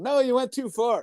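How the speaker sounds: put-on yelling. Retelling being told to turn a frozen antenna: imitating someone yelling. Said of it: "he's yelling out".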